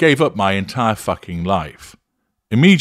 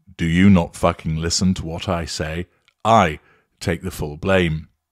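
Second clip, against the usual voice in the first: acted, mock-menacing tone; 3 semitones lower than usual. Narrating an example argument, acting out the narcissist in a menacing tone. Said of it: "in a menacing tone".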